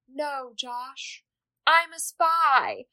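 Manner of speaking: mock sorrowful voice, soft and very slow. Retelling a scene where a spy turns away the boy who loves her: imitating a sad line. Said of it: "really sadly is like".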